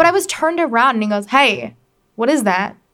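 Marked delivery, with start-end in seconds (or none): 1.3-2.7 cold, slow, not-so-friendly, unfriendly tone. Retelling a stranger's question at Whole Foods: imitating a not super friendly tone. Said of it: "That's how he sounded".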